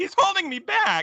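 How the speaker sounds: very high, very slow, drawn-out voice crack. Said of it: "His voice cracks a little bit".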